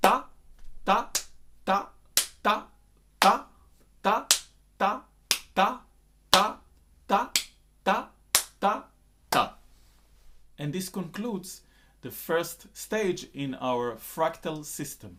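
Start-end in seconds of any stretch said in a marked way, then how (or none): 0.0-9.5 only the syllable ta, isolated beats, louder. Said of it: "isolate the first syllable, ta, in every takita".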